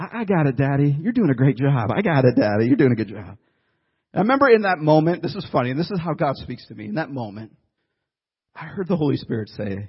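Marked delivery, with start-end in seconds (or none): 0.0-3.4 put-on voices of small children. Retelling the kids carrying groceries behind: imitating little kids' voices. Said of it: "these little voices going".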